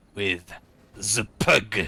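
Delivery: put-on French accent. Naming a unit in the game as a joke: put-on French accent. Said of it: "I have to use the French accent".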